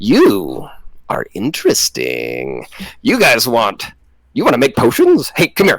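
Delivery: put-on lady voice, swooping and slow. Telling the scene, the speaker voices the woman calling the others over: voicing the lady character. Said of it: "she flips around and points and goes".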